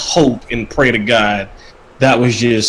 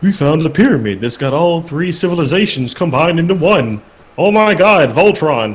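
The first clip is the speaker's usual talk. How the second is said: high-pitched, derisive, mocking voice; 6 semitones higher than usual. Describing a story's plot twist, the speaker uses a mocking voice. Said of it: "even when you say with the mocking voice".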